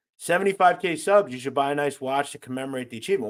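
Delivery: normal talking voice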